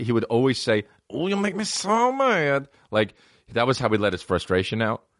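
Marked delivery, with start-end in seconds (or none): 1.1-2.7 very high, very slow, tiny and cross little voice. Retelling what a younger cousin always said, imitating his funny little voice. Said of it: "he had a funny little voice".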